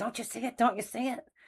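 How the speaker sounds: high, hushed whisper, urgent and pressing. Retelling urging her husband to look up: retelling a whisper. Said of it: "I'm whispering".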